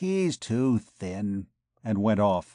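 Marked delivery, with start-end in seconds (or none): 0.0-1.5 mumbled under the breath between teeth, much slower. A woman trots round Gringoire, then goes off; mumbled between her teeth. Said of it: "she mumbled between her teeth".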